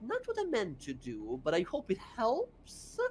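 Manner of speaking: tiny, small half-whispered voice. During a battle, a character half-whispers in the listener's ear: Bella's little half-whispering voice. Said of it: "as you hear a little voice whisper in your ear".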